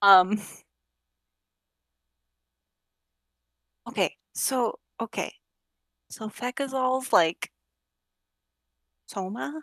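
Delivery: speaking very softly and slowly. A character tells a companion about someone, in really hushed tones. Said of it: "I'm gonna talk in really hushed tones".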